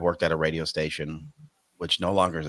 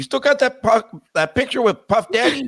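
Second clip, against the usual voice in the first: put-on very high, loud Mexican accent; 5 dB louder than usual. On the way to a family memorial service, the speaker imitates his dad's Mexican accent.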